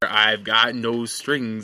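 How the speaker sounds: very slow, creepy, drawn-out delivery. Quoting a movie line in a creepy James Spader voice. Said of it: "the very creepy, like, uh, James Spader".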